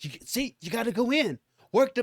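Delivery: restrained, half-hearted holler, yelling. Retelling a man yelling instructions to people in the ring, imitating someone screaming. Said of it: "all he doing was screaming like".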